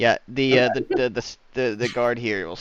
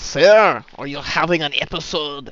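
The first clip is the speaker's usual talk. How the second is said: careful, loud, slow put-on French accent; 5 semitones higher, 7 dB louder than usual. Voicing a French guard questioning a player: French accent. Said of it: "He's French".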